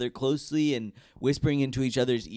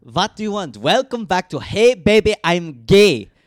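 booming fake Latvian accent drifting toward tropical; 5 semitones higher, 13 dB louder than usual. Asked to do it again, the speaker opens the podcast in a mock Latvian accent. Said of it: "not Latvian. It's giving like tropical lands".

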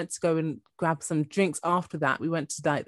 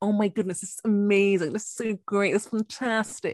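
affected, put-on posh fancy voice; 4 semitones higher than usual. Retelling a dinner date where he switched voices: imitating a date's put-on bougie voice. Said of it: "his voice kind of started changing".

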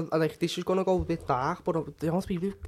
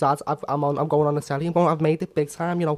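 ordinary talk

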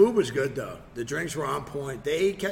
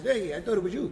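put-on friendly Spanish accent, pitched up; 6 semitones higher than usual. Retelling a night out, quoting a man who answered him, in a Spanish accent. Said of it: "he has a Spanish accent. He goes".

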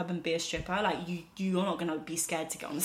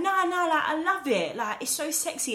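higher, polished, well-spoken proper voice; 10 semitones higher, 5 dB louder than usual. Retelling a man's reply about the speaker's sweat, in a proper voice. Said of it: "I'm giving him that proper voice".

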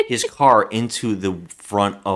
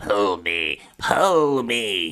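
very slow, dragging, unhuman creature voice. Retelling a movie scene where a man in a ditch begs: imitating an inhuman voice. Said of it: "He's not even talking like a human anymore".

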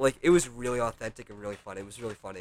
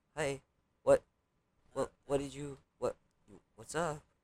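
mock nervous voice, higher and quieter; 4 semitones higher, 4 dB quieter than usual. Imitating how a friend always sounds on the phone: mock nervous voice. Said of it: "he always sounds like".

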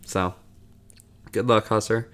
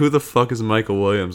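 ordinary delivery

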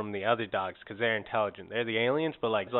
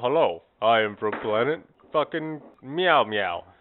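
loud, slow, deliberate, every word weighed; 5 dB louder than usual. Imagining an alien cat stepping out of a saucer: Patrick Stewart voice. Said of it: "fucking Patrick Stewart voice on it".

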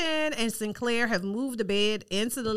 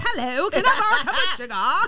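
put-on British accent, pitched up, raised voice; 9 semitones higher, 6 dB louder than usual. Retelling someone knocking on the door to borrow sugar: British accent. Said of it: "knocks on the door in her British accent".

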